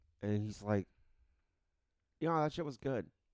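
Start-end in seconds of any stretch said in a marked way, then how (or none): 2.2-3.1 put-on nonchalant, indifferent tone, somewhat faster. Quoting a man who saw the movie in theaters, imitating his nonchalant tone. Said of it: "he said it in such a nonchalant way".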